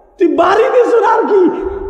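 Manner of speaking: startled shout.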